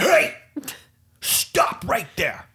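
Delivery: fatherly voice, very high-pitched. Speaker retells confronting an approaching dog, in a dad voice. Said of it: "Is my dad voice".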